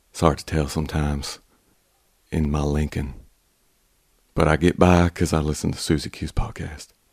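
exaggerated Texas accent. Doing a requested exaggerated Texas accent: Matthew McConaughey impression. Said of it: "Like Matthew McConaughey?".

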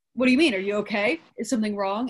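normal talking voice

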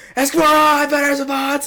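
very high, shrill, all-out yelling. Recounting shouting into the phone after spotting the guy who tormented him, retelling a yell. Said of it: "I'm fucking yelling".

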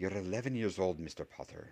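harsh, rough, sharp whisper. Narrator reading a professor's answer to an eleven-year-old boy, in a harsh whisper. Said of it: "she said in a harsh whisper".

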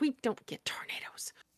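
whispered, breathy mutter. Retelling what a woman said racing down the stairs, muttering. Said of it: "she's muttering".

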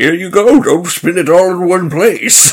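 put-on elderly man voice. A game master narrates an old man sliding a potion across, in an old man voice. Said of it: "his old man voice exactly the way I do when I'm DMing".

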